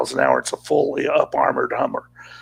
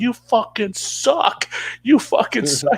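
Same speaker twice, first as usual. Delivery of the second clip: jeering, high-pitched shout through laughter; 7 semitones higher than usual. Retelling what the crew yelled after surviving a blast: imitating a laughing yell. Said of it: "just start laughing and yell".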